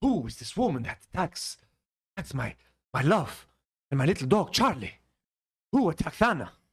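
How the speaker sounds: put-on Spanish accent. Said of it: "I gave him a, a Spanish accent".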